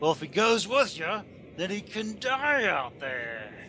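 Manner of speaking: growled, menacing voice. A game narrator voicing a bandit who grabs another character, growling. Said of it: "he growls".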